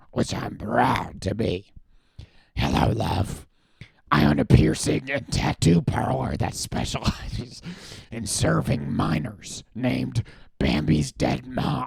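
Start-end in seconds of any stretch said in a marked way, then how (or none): 2.5-11.8 voice of a lifelong smoker. Reading a text aloud as asked, lifelong smoker voice. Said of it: "Please read this like a lifelong smoker".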